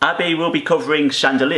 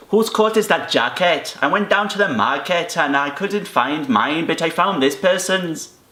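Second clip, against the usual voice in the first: put-on Welsh accent held throughout. Asked by the other speaker to do an accent, speaker tries a Welsh accent. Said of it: "I want you to do a Welsh".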